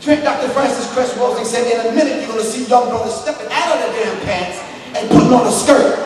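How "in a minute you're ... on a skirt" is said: usual speaking voice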